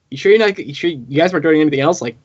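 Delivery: ordinary talk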